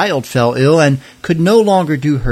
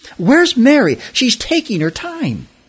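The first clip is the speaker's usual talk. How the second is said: very high-pitched, impatient, panicked fretting voice; 10 semitones higher than usual. Rushing to feed guests, a woman waits for someone who is late; panicked. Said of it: "Martha was in a panic".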